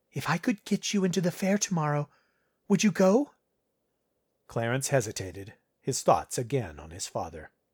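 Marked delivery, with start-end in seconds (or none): 0.2-3.3 high, secretive, breathy half-whisper. As her mother leads her away, Denise turns to Clarence, half-whispered. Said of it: "she whispered".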